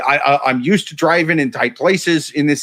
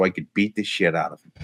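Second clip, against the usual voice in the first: plain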